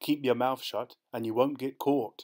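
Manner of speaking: plain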